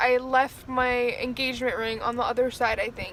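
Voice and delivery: ordinary talk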